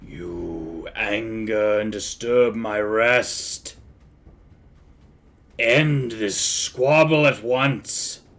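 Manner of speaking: rasping voice. A game narrator voices whoever rests in the struck sarcophagus, in a raspy voice. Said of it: "you can hear a raspy voice that says".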